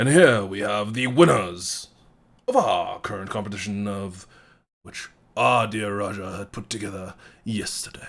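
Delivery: loud, booming announcer voice. A speaker at a podium addresses the whole room: booming voice. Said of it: "his voice kind of booms out".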